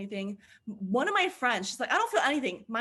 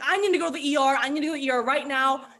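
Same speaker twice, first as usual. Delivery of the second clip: put-on panicked voice, louder; 6 dB louder than usual. Retelling a friend's reaction after getting too high: imitating a panicking friend. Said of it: "She's flipping out".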